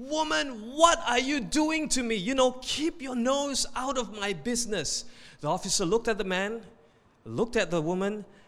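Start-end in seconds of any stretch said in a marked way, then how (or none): 0.0-5.0 high, furious, indignant outburst in a man's voice. Telling a joke about a traffic stop, voicing the husband: imitating a furious man. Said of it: "The man was furious at this point".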